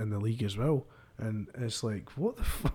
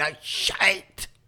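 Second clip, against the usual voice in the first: play-acted, pitched-up, breathless final-breath push; 9 semitones higher, 4 dB louder than usual. Mimicking how the pundit's voice ended: imitating a voice pushing out the last breath. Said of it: "he's pushed that last bit of fucking oxygen".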